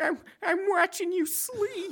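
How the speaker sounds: ridiculous, very high, drawn-out voice. Asked to do a brother's ridiculous voice, imitating Rick's ridiculous voice. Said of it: "can you do the ridiculous voice that he does?".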